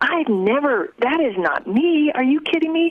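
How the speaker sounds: high, incredulous protesting voice.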